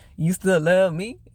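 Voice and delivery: spoken through laughter. Retelling how a man answered a woman: imitating someone laughing. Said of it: "he started laughing like".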